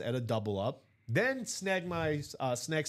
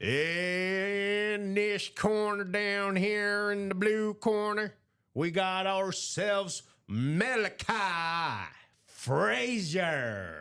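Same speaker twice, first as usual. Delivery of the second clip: put-on Texas drawl, very slow; 4 semitones higher than usual. Announcing a fighter in the blue corner in a put-on Texas accent. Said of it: "that's my Texas accent down here".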